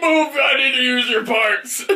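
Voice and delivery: mock yell barked through laughter.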